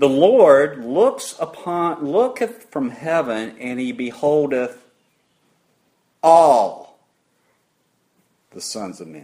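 slow reading with the word ALL punched loud. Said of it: "I'm gonna emphasize the word".

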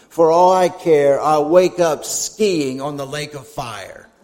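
put-on low, scornful, taunting, mocking tone. Speaker recounts what a man said before his surgery: retelling a mocking reply. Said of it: "he said in a mocking tone".

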